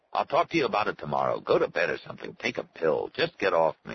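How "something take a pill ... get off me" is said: ordinary delivery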